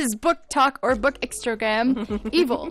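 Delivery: ordinary delivery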